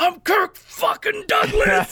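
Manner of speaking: put-on very high, very slow drawn-out shriek. Describing a movie, the speaker acts out Stacy Keach screaming on a rampage. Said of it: "he keeps screaming".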